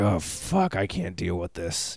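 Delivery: very low, slow tough-guy voice. Describing the other speaker as a Clint Eastwood character: Clint Eastwood character voice. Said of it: "like a fucking Clint Eastwood character".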